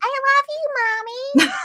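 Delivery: put-on cat voice, very high and very slow. Speaker shows how she imagines her cat talking to her, in a pretend cat voice. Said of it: "I have like their pretend voice talk to me".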